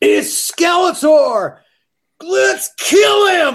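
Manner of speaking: put-on kid yell, very high, very slow, shrill, full-lung. Retelling a young boy in the audience seeing Skeletor, imitating his shout. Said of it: "at the top of his lungs".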